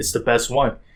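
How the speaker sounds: usual speaking voice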